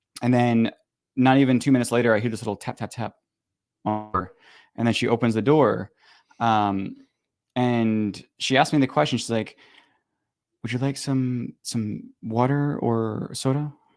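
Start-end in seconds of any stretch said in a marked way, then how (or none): 10.7-13.8 hushed, slow, very soft-spoken voice. Retelling what a woman asked after opening the door, imitating a very soft voice. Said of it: "And this like very soft voice".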